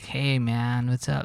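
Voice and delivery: put-on drawling stoner-dude voice. Imitating dudes who talk like stoners: imitating a stoner voice. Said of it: "talk like stoners".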